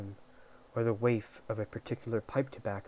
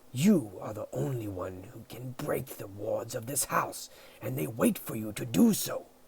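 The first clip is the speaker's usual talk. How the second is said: hissing, swooping angry cat voice, scolding tone; 4 dB louder than usual. Reading a novel, the cat speaks to Sabriel as she wakes: Mogget hissing. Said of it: "he hissed".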